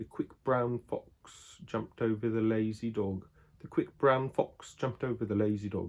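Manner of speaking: attempted proper English accent. Ending a video, the speaker tries doing an English accent properly. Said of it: "Let me see if I can do it good".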